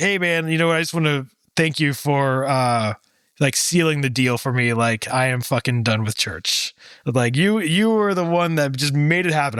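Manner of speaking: ordinary delivery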